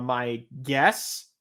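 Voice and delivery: "guess" stressed hard and drawn out slowly.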